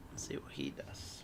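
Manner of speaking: whispered aside.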